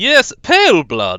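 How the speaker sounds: very loud, high-pitched put-on fancy voice. A streamer tries out a voice for a game character: fancy voice. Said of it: "I need to figure out my fancy voice".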